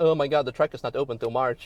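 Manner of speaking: ordinary talk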